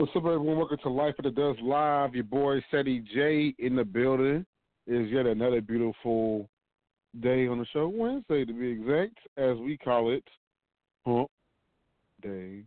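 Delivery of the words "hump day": dull, flat, bland, unenthused delivery. Host opening the show and naming the weekday, flat bland delivery. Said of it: "I said it so bland".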